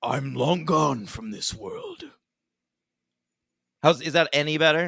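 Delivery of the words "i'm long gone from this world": too-jovial voice with pitch swooping around. Retrying the line for a co-host, doing a too jovial Jigsaw impression. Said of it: "You sound like too jovial".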